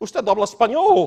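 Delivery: put-on Romanian accent, very loud. Retelling a lady who overheard them speaking Spanish, in a Romanian accent. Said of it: "in a Romanian accent".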